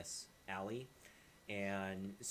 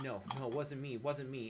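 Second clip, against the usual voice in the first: high, desperate, pleading tone; 5 semitones higher, 4 dB louder than usual. Narrating a man backed against a wall, surrounded by three men, pleading. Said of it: "He's pleading like".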